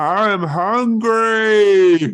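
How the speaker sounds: very high, very loud, shrill, drawn-out howling monster bellow. Describing how he sounds at the end of the tape, retelling a bellow. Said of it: "he just bellows like he does on the end of the tape".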